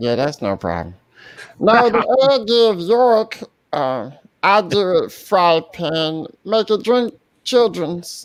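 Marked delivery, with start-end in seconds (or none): 1.6-8.3 put-on cartoon character voice. Reading the next line aloud on request in Meat Wad's voice. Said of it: "let [name] read the next one in Meat Wad's voice".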